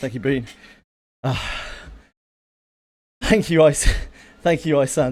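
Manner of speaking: soft, winded voice, short of breath. Host thanks viewers by name for watching: out of breath. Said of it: "I'm a bit out of breath".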